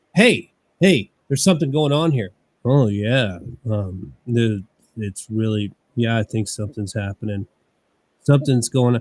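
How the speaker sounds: put-on, very low, flat, dull monotone drone. Reenacting a scene from a ghost-hunting TV show: imitating a monotone, boring delivery. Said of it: "Let me reenact the scene for you".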